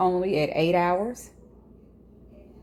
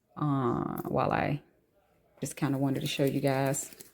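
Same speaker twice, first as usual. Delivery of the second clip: soft, low-volume aside. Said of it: "Why am I talking low?".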